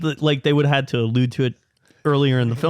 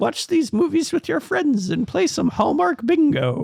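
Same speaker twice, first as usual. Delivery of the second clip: put-on elderly old lady voice, pitched way up; 12 semitones higher than usual. Retelling what mom said when handing over the bingo cards: imitating mom as an old lady. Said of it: "trying to make her sound more like a old lady".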